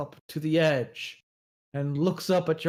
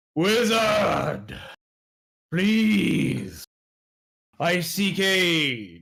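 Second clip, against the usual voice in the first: slow, drawn-out monster voice, aid stretched long; 3 semitones higher than usual. Voicing a huge creature rising from a lake: bellowing monster voice. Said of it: "breaks the surface and bellows".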